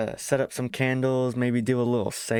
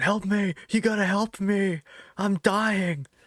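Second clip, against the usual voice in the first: put-on high, stretched-out, drawn-out scream; 9 semitones higher than usual. Acting out a friend begging for help in an imagined zombie game: imitating someone screaming.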